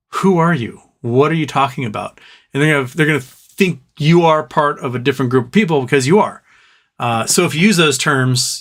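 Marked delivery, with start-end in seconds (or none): none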